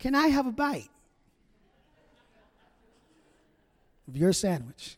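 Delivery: soft, sweet, gentle little voice. Retelling someone at home asking for a bite, in a sweet, gentle voice. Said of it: "that sweet, gentle voice says".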